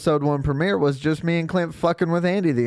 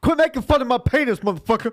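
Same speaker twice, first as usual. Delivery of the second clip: shifted speaking voice, pitched up; 7 semitones higher than usual.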